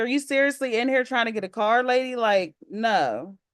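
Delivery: ordinary talk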